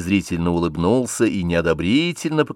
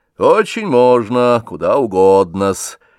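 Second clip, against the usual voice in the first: slow, raised, scornful and contemptuously dignified voice; 3 semitones higher, 6 dB louder than usual. A man replies after going into the study is suggested, with contemptuous dignity. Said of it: "с презрительным достоинством сказал Рябинин".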